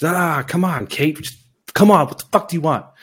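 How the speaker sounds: high, loud, exasperated yelling.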